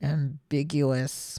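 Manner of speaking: muttered under breath. Retelling what Ren said after the word was stumbled over, muttered under breath. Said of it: "mutters under his breath".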